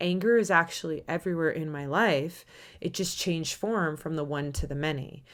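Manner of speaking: plain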